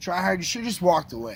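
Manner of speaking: ordinary talk, nothing marked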